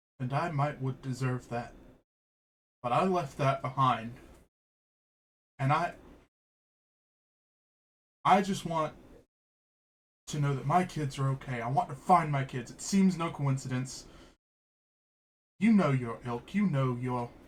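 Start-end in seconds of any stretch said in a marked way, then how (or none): 0.2-12.7 subdued, calmer, lower voice, still edgy and tense. Narrator voices Bucky, back on his feet after a death threat: calmer, lower, tense voice. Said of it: "in a calmer, lower voice, but there's still a lot of edge".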